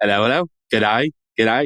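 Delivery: attempted put-on Australian accent. Recalling their own attempt at an accent, in an australian accent. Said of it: "my Australian like quickly like devolves".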